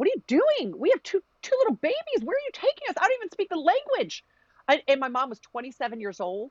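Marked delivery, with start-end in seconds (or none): 0.0-4.2 acted-out frantic scream, very high pitch. Retelling mom's protest on being taken on a plane: imitating mom screaming. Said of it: "kicking and fighting and screaming and saying".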